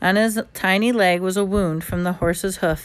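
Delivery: ordinary delivery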